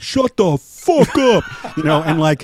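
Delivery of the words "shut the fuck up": put-on old Brooklyn Italian tough guy, very high, very slow. Describing how people used to talk: imitating old Italian Brooklyn guy. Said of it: "old Italian guys in Brooklyn would be like".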